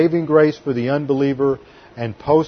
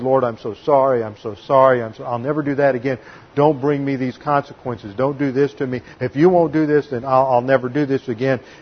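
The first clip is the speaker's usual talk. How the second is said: mock pleading voice. Acting out how believers beg the Lord after sinning: imitating begging the Lord. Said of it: "we always try to beg with the Lord".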